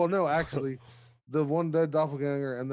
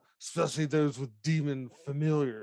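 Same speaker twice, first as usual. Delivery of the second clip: tossed-off, cutting mutter said as an aside. Voicing a character mid-swing with an aside: muttering under his breath. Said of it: "you hear him under his breath go".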